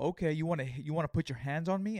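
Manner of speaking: acted threatening voice. Retelling squaring up to a man who wanted to swing at him, retelling a menacing challenge. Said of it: "ready to fucking throw a punch at this fool".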